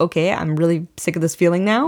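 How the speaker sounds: ordinary delivery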